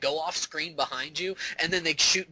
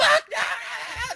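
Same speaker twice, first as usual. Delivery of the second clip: put-on very high, loud, childish screaming outburst; 6 dB louder than usual. Retelling throwing a controller out the window as a kid, imitating a child screaming. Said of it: "And I'm and I'm screaming".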